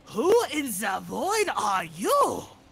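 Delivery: high, booming, bellowed German accent with swooping pitch. Told to do it, speaker delivers a line in a German accent. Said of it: "I so want to throw on a German accent and do".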